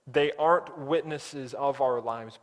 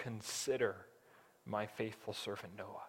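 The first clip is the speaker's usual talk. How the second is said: hushed, very soft, quiet, loving and tender; 5 semitones lower, 13 dB quieter than usual. Quoting God's answer to a complaint about a hard road, in a put-on soft, tender voice as God. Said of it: "God says with a soft, loving, tender voice".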